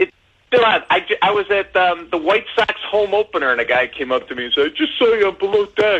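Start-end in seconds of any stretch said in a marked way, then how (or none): 4.7-6.0 mock drunk speech, higher pitch. Retelling what a guy said at a ballgame: imitating a drunk fan. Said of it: "Did he sound like that?".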